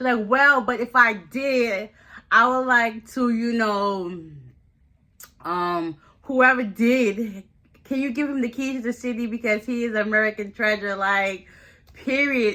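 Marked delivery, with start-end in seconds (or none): 0.3-11.0 sarcastic throughout, with drawn-out "did". Retelling what a suspect said when questioned: imitating a sarcastic remark. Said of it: "trying to be sarcastic".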